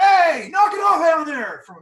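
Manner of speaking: high shouting voice. Voicing someone at a nearby window who yells down: yelling. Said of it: "you hear someone yell".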